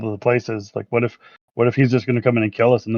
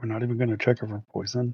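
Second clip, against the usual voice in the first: muttered under breath, quieter; 9 dB quieter than usual. A player character reacts as someone brings hot food; muttered under breath. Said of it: "mutter under my breath".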